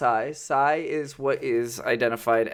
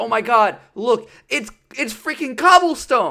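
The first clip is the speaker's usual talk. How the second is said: mock wild, swooping, high, loud excited outburst; 11 semitones higher, 7 dB louder than usual. Retelling finding coal while mining in a game; acting out freaking out. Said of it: "and I freaked out, and I said".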